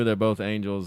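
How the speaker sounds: ordinary talk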